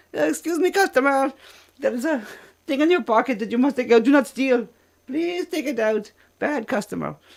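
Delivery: very high, loud, put-on Indian accent, woman's voice. Quoting a favorite voice that scolds a customer, imitating an indian woman's voice. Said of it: "I love the Indian girl voice".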